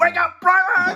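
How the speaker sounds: all-out, high, wild screaming. Recounting a film scene where he kicks a body: retelling a scream. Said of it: "He's screaming at Lister".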